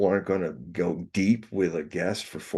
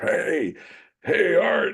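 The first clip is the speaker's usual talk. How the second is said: very high, smoky, gravelly trucker voice; 10 semitones higher, 3 dB louder than usual. Retelling a late-night radio call, imitating a woman trucker greeting the host in a smoky, gravelly voice. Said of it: "gravelly voiced woman who's a".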